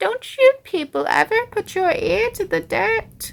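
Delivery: very high-pitched, loud creature voice. Addressing 'you people', speaking in the Worm of Pestilence voice. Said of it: "I am the worm of pestilence".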